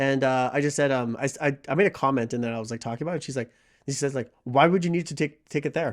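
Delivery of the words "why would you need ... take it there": put-on passive-aggressive tone. Retelling what a manager said: imitating a passive-aggressive tone. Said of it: "really passive aggressive tone".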